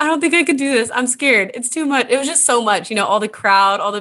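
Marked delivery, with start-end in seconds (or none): 0.0-2.1 frightened, weepy, tearful, scared, pitched-up crying voice. Retelling calling her dad two miles in as a sixth grader: imitating herself crying, scared. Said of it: "I call my dad and I'm like crying".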